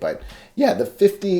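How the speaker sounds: voice cracking. Talking to the audience about a setting, voice cracking. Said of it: "my voice cracked".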